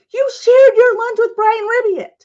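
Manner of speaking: angry, shrill scream, very high and very loud. Recounting being yelled at in school, act out the lunch lady screaming. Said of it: "the lunch lady is screaming at me".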